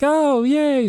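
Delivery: put-on very high, chipper, bubbly chirping voice. Retelling a phone call, imitating a chipper mom. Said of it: "my mom's so, like, chipper".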